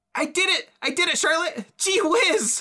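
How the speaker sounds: very high, loud, thrilled excited shout. Jumping out the back in character, cheering to Charlotte: loud excited shout. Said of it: "Keep, keep your voice down".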